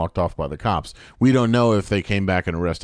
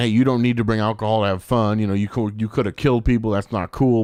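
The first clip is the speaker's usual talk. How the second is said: normal talking voice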